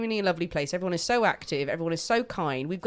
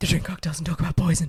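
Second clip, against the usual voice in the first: attempted deep voice; 2 semitones lower, 3 dB louder than usual. Asking a co-host if ready for cocktails: attempted deep voice. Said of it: "I tried to do a deep voice there".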